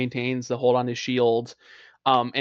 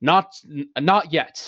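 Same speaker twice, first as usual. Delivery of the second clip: grand, commanding, declaiming voice; 3 semitones higher than usual. A player's character holds up his hand toward another character; Arcel's booming voice. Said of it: "just speaks out in sort of a booming voice".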